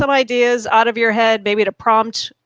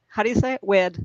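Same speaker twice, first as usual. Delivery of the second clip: normal talking voice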